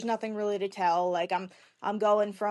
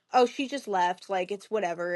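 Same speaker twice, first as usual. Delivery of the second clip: plain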